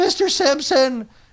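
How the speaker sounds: put-on very high-pitched teenage voice. Describing someone's voice by comparison, doing Pimply-Faced Teen voice. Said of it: "one notch below pimply faced teen".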